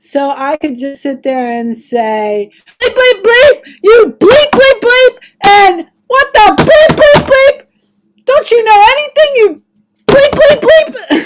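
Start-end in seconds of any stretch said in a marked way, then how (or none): 2.8-11.3 put-on celebrity chef rant, higher and louder. Answering a prompt to play Gordon Ramsay judging a bad speaker: Gordon Ramsay impression. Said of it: "You're Gordon Ramsay".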